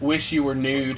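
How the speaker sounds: theatrical, dramatic reading voice. Acting out an online exchange as Marine Sniper: mock-dramatic reading. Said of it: "I need you to dramatically read with me".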